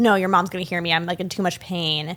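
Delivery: ordinary delivery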